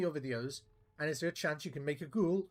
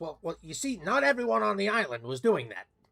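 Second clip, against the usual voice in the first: excited, swooping, bouncing animated voice; 4 semitones higher, 4 dB louder than usual. Showing how one actor sounds compared with another, in an excited Danny DeVito voice. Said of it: "he talks a bit more excited like this".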